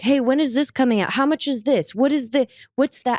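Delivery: high, fast, demanding yell.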